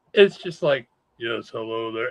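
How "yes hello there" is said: very low, soft, deep chest-rumble voice. Imitating a comic writer's very low voice after a retailer call. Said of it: "that dude has the lowest voice".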